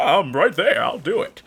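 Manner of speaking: grand, wizardly voice of an ancient elder. Acting out what a voice actor would say when called back to a role, sounding like Gandalf the Grey. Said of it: "he sounds like Gandalf the Grey".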